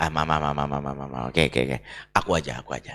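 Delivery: gentle, low, soft and soothing voice.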